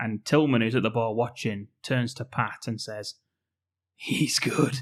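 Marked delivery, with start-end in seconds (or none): 4.0-4.8 put-on suave film star voice. Quoting a film character watching from the bar: Pierce Brosnan voice. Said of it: "Sounds a bit like a Pierce Brosnan".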